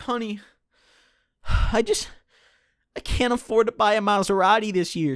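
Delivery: acted-out, high-pitched, tearful crying and sobbing. Acting out a dad answering his daughter's question: mock crying. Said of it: "Dad, why are you crying?".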